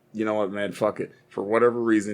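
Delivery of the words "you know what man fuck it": normal talking voice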